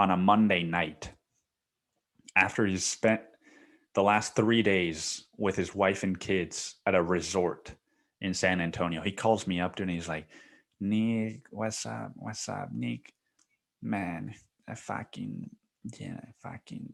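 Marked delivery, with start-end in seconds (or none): 10.8-16.9 put-on depressed tone, quieter. Retelling a boss's phone call: imitating the boss sounding depressed. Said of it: "just, like, depressed, man".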